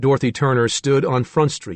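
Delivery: ordinary delivery, nothing marked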